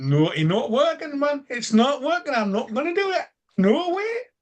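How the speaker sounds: clumsy, bad, very high-pitched northern English accent. Goaded into it by another speaker, the speaker does a bad northern accent. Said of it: "That was really bad, [name]".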